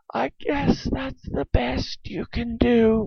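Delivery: gasped out, short of breath, slightly high. Reading a story aloud, an aunt whose waist is being pulled in speaks, gasping. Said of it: "at last she gasped".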